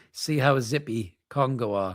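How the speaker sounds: normal talking voice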